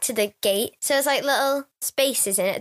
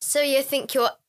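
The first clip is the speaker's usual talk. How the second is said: normal talking voice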